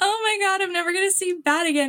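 mock crying through every word, high and tearful. Retelling hugging someone at stage door: imitating own past crying. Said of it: "and then I start, like, crying again".

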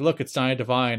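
normal talking voice

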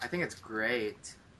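heavily sarcastic, slow drawl. Answering a question about what they think of the show so far: sarcastic. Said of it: "That sounded so sarcastic".

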